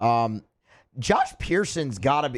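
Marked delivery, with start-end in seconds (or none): 1.0-2.4 voice cracks, higher pitch. Speaker talking about a ballplayer, voice cracking. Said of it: "it was a voice crack. You heard that?".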